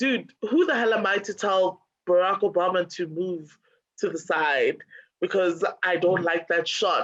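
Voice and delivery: normal talking voice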